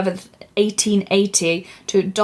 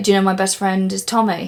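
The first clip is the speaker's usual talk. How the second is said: usual speaking voice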